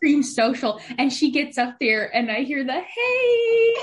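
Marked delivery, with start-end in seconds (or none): 2.7-3.7 very high, drawn-out, polite formal voice. Imitating a friend starting a band announcement in customer service voice. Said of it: "did an announcement to the band".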